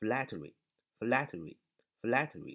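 slow "flattery", stress on first syllable.

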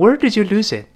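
voice drops with falling tone on final "it". Teaching english wh-question intonation: falling pitch on final it. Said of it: "特殊疑问句降调，所以是这么问的".

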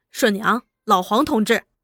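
ordinary delivery

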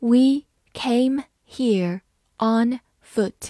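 plain, model classroom read-aloud. English sentence read aloud in a lesson, slow reading. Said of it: "慢读一遍。".

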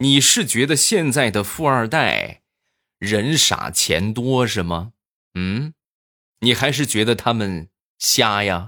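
acted, pointed, needling sarcastic retort. Retelling the wife's retort to an overconfident friend: imitating a retorting question. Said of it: "不由得反问道".

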